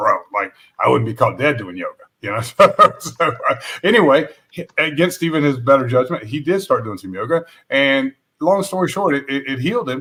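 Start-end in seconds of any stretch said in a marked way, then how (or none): 0.0-1.9 fast, gruff, rough-edged delivery. Retelling what Dallas said when told to try yoga, imitating his gruff voice. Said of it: "if you know Dallas and his gruff voice".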